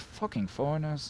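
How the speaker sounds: very quiet, half-swallowed mutter under the breath. Voicing an official who walks away with a clipboard: muttered under his breath. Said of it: "you just hear him under his breath say".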